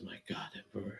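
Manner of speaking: said quietly under breath. Voicing a character reacting to grave news: muttered under his breath. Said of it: "under his breath says".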